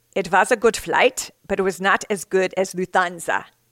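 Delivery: put-on thick Austrian accent. Quoting a man's answer at a press conference after his crash, thick austrian accent. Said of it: "in his thick Austrian accent".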